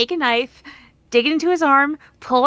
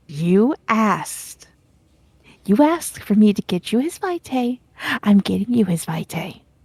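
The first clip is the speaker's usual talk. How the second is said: acted whisper, lower pitch; 6 semitones lower than usual. Voicing a character who leans to Rowan: whispering in character. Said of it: "leaning to Rowan and whispering".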